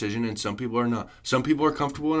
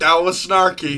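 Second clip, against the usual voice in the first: loud scolding voice, high; 5 semitones higher, 7 dB louder than usual. Co-host teasing the host for sounding like he reprimands a four-year-old, mock-reprimanding a small child. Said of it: "You're like".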